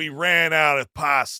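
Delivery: put-on tough-guy Italian-American accent. Retelling a restaurant worker turning a customer away: put-on Guido voice. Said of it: "some fucking Guido goes like".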